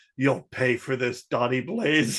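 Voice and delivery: put-on vengeful, threatening voice. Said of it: "He's like".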